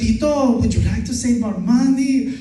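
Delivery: put-on, almost Mexican accent. Mimicking someone's go-to voice when asking about money, put-on almost Mexican accent. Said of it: "it sounds almost like Mexican".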